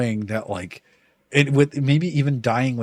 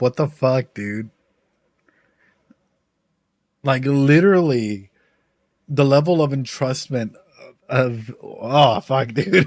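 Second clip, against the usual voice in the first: tearful, choked-up voice; 3 dB louder than usual. Reacting to an emotional scene, tearing up. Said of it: "I'm fucking tearing up".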